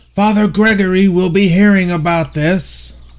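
high, loud hollered calling out. Narrating a scene, voicing a man who hollers after the group walking off: hollering. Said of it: "he hollers out".

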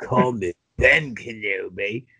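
low, shoddy, really bad British accent. Acting out Obi-Wan Kenobi at the bar, in a really bad British Obi-Wan Kenobi accent. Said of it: "was a really shitty British accent".

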